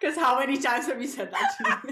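laughing speech, high and swooping. Reacting to the other speaker's coaching phrase: laughing while talking. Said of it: "Why are you laughing?".

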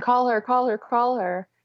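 high, urgent, pleading voice, repeated. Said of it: "I told him while I was having the contraction".

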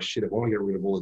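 ordinary talk

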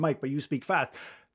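plain

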